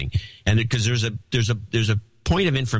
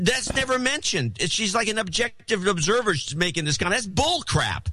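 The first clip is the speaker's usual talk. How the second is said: agitated, worked-up, very high-pitched voice; 10 semitones higher, 3 dB quieter than usual. Criticizing a news clip to another speaker: worked up. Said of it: "sorry I got worked up".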